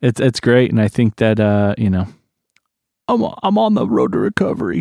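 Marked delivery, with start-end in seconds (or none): 3.1-4.8 halting, formal politician-style podium delivery. Saying they are on the road to recovery: sounding like Bill Clinton. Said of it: "I sound like Bill Clinton just now".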